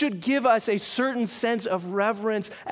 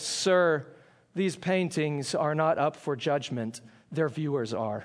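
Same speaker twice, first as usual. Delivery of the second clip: put-on grave, solemn, very low somber voice; 7 semitones lower, 4 dB quieter than usual. Telling a story, a security guard answers a visitor who dislikes a painting, somber voice. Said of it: "says in a somber voice".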